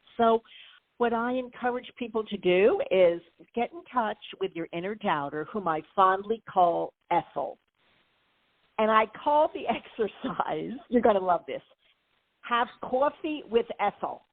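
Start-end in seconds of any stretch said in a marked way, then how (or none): 12.4-14.2 best attempt at a put-on New York accent. Naming the exercise for meeting your inner doubter, in your best New York accent. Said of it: "in my best New York accent".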